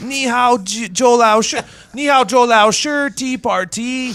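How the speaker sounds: bad fake British accent. Imitating a man speaking to a crowd of police: bad fake British accent. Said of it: "what do you think a Korean doing a British accent would sound like".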